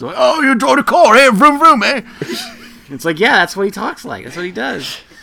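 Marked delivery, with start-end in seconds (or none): 0.2-2.0 high, loud put-on British accent. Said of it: "his impression once".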